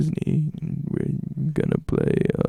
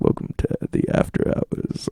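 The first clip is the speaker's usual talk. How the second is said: put-on late-night radio bass, very low and creaky. Friends chatting about radio stations, imitating a radio announcer: fake bass radio voice. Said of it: "fake bass voice".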